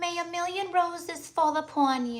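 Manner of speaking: tiny, very high, cute little voice. Sending Valentine's wishes to listeners, the speaker tries a cute little put-on voice. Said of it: "I'm trying to talk like a cute little".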